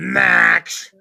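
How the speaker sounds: very loud, rough, furious, drawn-out angry call. Showing how a name can be said, said angrily. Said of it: "You could say Max pretty angrily".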